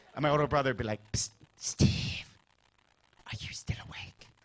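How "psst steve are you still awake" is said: soft, breathy, hushed whisper. Retelling a brother whispering at night in the shared bedroom: imitating a brother whispering. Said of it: "So we had to whisper".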